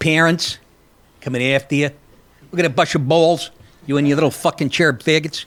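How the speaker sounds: vague, half-done put-on New York accent. Mocking a sheriff's warning to parents: imitating a new york accent. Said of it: "it was so indeterminate with the accent".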